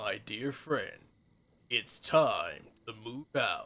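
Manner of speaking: low-pitched, deeply sad, heartbroken voice. Echoing a game character's line, redone as the saddest Optimus Prime voice. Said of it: "sound like the world's saddest Optimus Prime".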